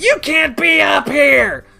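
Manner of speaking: put-on very high, rough, drawn-out scream. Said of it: "You don't need to scream at me".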